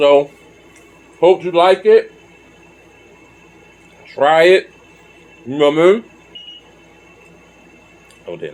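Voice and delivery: talking while chewing. A food video host urging viewers to try it, talking while chewing. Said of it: "I'm still chewing".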